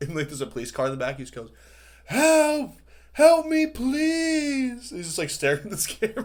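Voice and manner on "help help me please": mock very high, loud echoing yell, please stretched. Describing a man filming himself, the speaker imitates his loud screaming. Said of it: "He's like screaming really loud".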